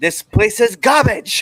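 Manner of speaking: very high, loud, stretched-out promo voice. Showing how a wrestler would cut a heel promo: Gunther impression. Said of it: "That's my impression of Gunther".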